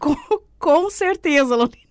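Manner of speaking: speaking through laughter. Answering the other speaker's question, laughing. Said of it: "Eu tô rindo porque".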